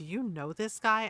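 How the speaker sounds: put-on whisper. Retelling what a coworker asked about a stranger: imitating a whisper. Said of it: "she whispers to me".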